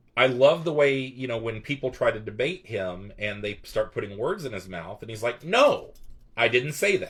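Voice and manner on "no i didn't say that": stern, loud, slow, deliberate delivery. Retelling how Jordan Peterson rejects words put in his mouth: stern Jordan Peterson impression. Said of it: "he's very stern about it".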